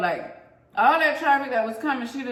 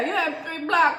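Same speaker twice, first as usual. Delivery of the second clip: put-on Arabic accent, voice pitched higher; 6 semitones higher than usual.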